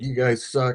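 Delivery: heated angry rant. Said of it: "had a big cussing and long rant".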